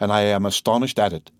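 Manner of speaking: ordinary delivery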